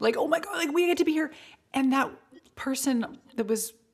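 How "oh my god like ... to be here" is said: put-on high, over-enthusiastic gush, odd intonation. Showing how she usually says the phrase, mock-enthusiastic with odd intonation. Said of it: "I say it with that odd intonation".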